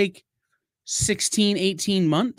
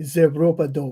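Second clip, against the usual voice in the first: put-on French accent, lower pitch; 4 semitones lower than usual. Answering a request to say the phrase in a French accent. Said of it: "say it in a French accent".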